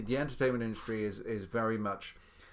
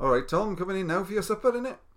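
loud Welsh accent, pitched very high; 9 semitones higher, 8 dB louder than usual. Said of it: "So you can do a Welsh accent".

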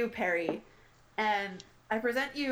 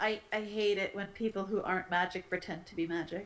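quiet, grumbled mutter under the breath. Asked about grievances in a game, a player has Sayersha mutter under breath. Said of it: "quietly under their breath is just like".

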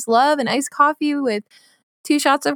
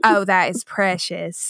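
put-on old Southern woman voice, lower; 5 semitones lower than usual. Retelling trying on a beanie in a shop, imitating old southern woman. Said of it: "it's like this old Southern woman".

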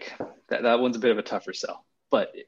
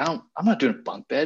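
put-on high, stubborn tone; 5 semitones higher than usual. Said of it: "and she's like".

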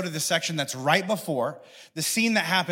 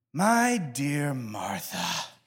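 spoken on a long sigh; 3 semitones lower than usual. A speaker reads Jesus's words to Martha, with a put-on sigh. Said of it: "I always read this as if he's sighing".

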